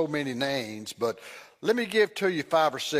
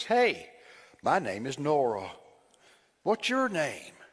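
put-on little child voice. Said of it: "I heard that little voice say".

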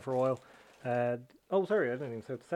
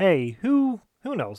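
outright loud, high-pitched yell; 5 semitones higher, 9 dB louder than usual. Podcast host opening the show, shouting. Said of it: "Sorry for shouting there as well".

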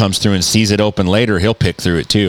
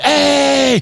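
mock, shrill, very high, drawn-out yelled hey. Retelling how someone startled awake started yelling out the window, imitating someone yelling. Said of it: "started yelling".

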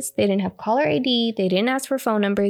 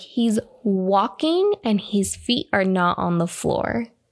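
ordinary delivery

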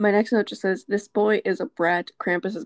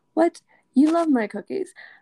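high, pitched-up, surprised tone; 9 semitones higher than usual. Retelling a scene where an elf refuses cookies, acting out Mrs. Claus. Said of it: "Mrs. Claus is like".

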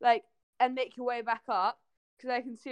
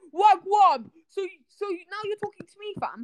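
put-on roadman voice, higher, louder; 8 semitones higher, 6 dB louder than usual. Imagining a roadman version of Siri answering a user: Roadman Siri voice. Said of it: "Imagine if there's a Roadman Siri".

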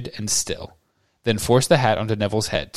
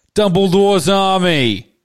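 very high shout, "army" drawn out; 9 semitones higher, 7 dB louder than usual. Narrator reads Neville's line, answered by a cheer from the crowd: shouting. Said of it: "he shouted".

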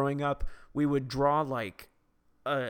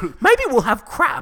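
very high-pitched, loud motherly tone; 10 semitones higher, 9 dB louder than usual. Quoting their mother's idea for Christmas dinner: imitating their mom's voice. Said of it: "Or in my mom's voice".

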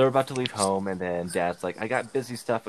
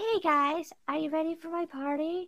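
very high, squeaky cartoon voice. Retelling what a boy says in the hallway, in a Mickey Mouse from South Park voice. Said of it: "he sounds like Mickey Mouse from South Park".

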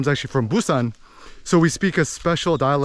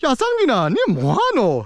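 put-on Busan accent with swinging up-down intonation; 10 semitones higher than usual. Imitating the speaker's uncle from busan talking: busan dialect, swinging intonation. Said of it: "My Busan uncle is like, ... So it's kind of like this, like twingy, up swings, down swings".

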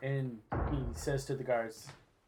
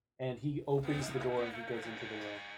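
ordinary talk

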